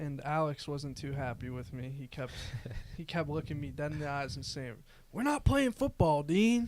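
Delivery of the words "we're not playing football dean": very loud, high, shrill, booming put-on country accent. The referee retells what Alex kept saying to him during the game, country accent as Alex. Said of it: "He's country now?".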